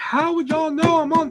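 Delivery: very high-pitched, furious screaming. Recounting an argument in the middle of the store, retelling screaming. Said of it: "I'm screaming in the middle of the store".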